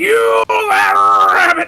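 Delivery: put-on cartoon cowboy voice. Joking about a yelling character: Yosemite Sam voice. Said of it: "Yosemite Sam and be like".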